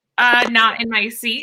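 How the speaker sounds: ordinary talk, nothing marked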